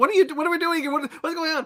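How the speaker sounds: mock very high, rushed, scared, confused babble. Retelling a film character waking up confused: imitating a scared man. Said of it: "he's Italian and he's so scared".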